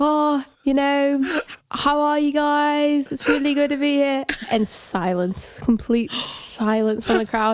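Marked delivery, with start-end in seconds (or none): 0.0-4.2 put-on English stage accent. Retelling greeting a crowd while playing with their band, in a fake English accent. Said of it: "I put on an English accent".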